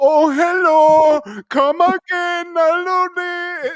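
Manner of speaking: put-on very high, very slow, very loud Indian accent. Acting out the establishment owner's greeting from the scene, imitating an indian accent. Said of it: "who I guess is Indian".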